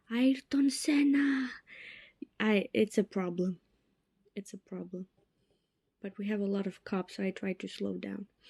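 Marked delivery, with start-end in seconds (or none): 0.1-1.5 mock sudden high, excited yelled exclamation. Talking about stepping on the gas too much, retelling a yell. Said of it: "I start yelling".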